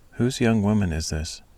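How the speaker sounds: plain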